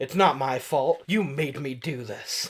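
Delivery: plain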